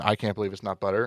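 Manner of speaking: ordinary delivery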